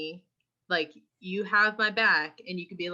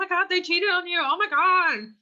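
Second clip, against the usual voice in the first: put-on scream, higher and louder; 12 semitones higher, 5 dB louder than usual. Retelling a person running up about being cheated on: imitating someone screaming. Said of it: "just screaming, like".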